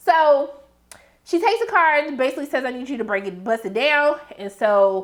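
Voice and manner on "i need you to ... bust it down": normal talking voice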